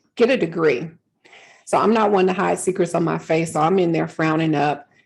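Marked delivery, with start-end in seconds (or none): 0.2-0.9 put-on haughty, arrogant, dismissive tossed-off delivery. Retelling an HR director's answer to a raise request: imitating an arrogant, dismissive tone. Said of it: "very arrogantly and in a dismissive tone".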